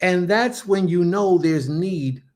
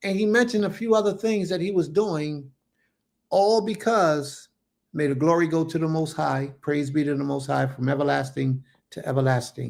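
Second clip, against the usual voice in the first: ordinary talk, nothing marked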